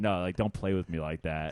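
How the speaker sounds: firm, serious, stern, low voice. Retelling confronting a guy who took the drink: imitating a stern low voice. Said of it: "stern with him and, like, lowered my voice".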